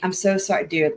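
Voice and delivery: mock patronizing, condescending tone. Speaker imitating a woman's apology while complaining about her tone, mock-patronizing apology. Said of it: "Condescending, patronizing. She's like".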